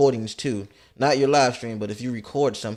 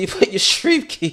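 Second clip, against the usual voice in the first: high voice cracking and breaking into laughter; 8 semitones higher, 5 dB louder than usual. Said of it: "Ew, my voice cracked".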